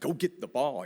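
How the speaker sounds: put-on frustrated coach yelling. A father retells yelling at his son during a game, retelling a yell. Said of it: "I'm yelling at it".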